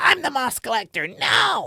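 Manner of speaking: very high, swooping goblin-ish creature voice. Demonstrating a character voice for playing kobolds, in a kobold voice. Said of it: "kobolds ... always talk like this".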